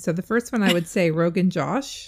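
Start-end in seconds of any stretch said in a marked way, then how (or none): 1.1-2.1 very American pronunciation. Trying to say a curry name aloud: very American pronunciation. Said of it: "I'm gonna say it very American".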